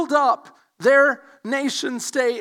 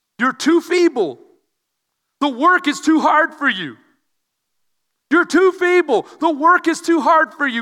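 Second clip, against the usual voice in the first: mock scornful, pointed taunt, each word aimed; 3 semitones higher, 4 dB louder than usual. Acting out the enemy ridiculing the builders: imitating a pointed taunt. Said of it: "He says very, very pointedly".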